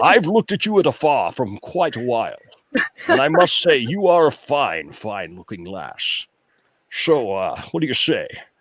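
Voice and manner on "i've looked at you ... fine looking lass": put-on Scottish accent, lower pitch. Retelling phone calls wooing someone in a Sean Connery impersonation. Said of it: "my Sean Connery impersonation".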